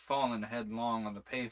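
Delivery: ordinary delivery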